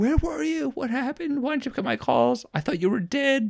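very high, rapid-fire, rushed screaming. Retelling calling their mom back after many missed calls: imitating mom screaming. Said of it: "screaming at me".

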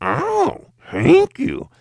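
very high, squeaky, swooping gremlin puppet voice. Speaker shows the voice a planned puppet would use: gremlin puppet voice. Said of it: "Like some gremlin".

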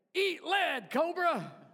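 high, little talking-toy voice box sound. Remembering a childhood toy's voice box phrases, G.I. Joe toy voice box. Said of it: "you would hear the little voice box in there that would say".

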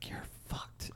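breathy, barely voiced, very soft hushed whisper. Retelling how a character leans in at the end: imitating a whisper. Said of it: "whispers to him".

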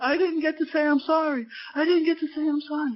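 high-pitched screaming, repeated over and over. Recounting a woman who came in minutes later: imitating a woman screaming. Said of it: "this woman comes in screaming".

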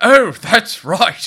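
high, slow, loud mock English accent.

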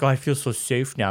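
sarcastic tone, meaning the opposite. Retelling a character's reply to an offer of police protection: imitating a sarcastic remark. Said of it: "and he's being sarcastic".

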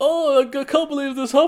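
shrill, booming, overdone hamming, very high and loud. Describing how a film character plays a scene: imitating Al overacting. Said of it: "Al is playing it like".

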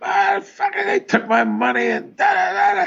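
very high-pitched screaming rant. Retelling a comic's phone call about stolen money: imitating a comic screaming. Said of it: "And he's screaming".

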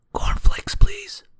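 speaking in a whisper. Reading a story aloud, a shy character asks for cornflakes: whispering. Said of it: "he whispered".

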